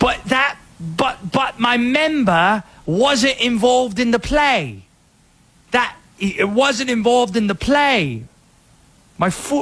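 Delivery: put-on thick English accent. Voicing the offside player in a sports discussion, thick English accent. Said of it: "in a thick English accent".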